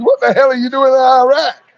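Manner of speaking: top-of-the-lungs outcry. Retelling how americans protested the iraq war: retelling a scream. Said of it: "We were screaming at the top of our lungs".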